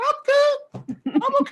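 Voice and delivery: very high-pitched, slow, careful, drawn-out voice. Retelling answering a question in a restaurant: high-pitched voice. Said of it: "I started speaking like you know high pitched".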